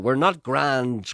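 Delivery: put-on loud scream. Arguing back about schools: screaming. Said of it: "screamed Jim".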